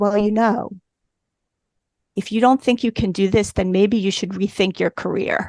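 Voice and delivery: very calm, unruffled, measured and even. Retelling what he said about the dog lab, imitating someone speaking very calmly. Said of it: "he said to me very, very calmly".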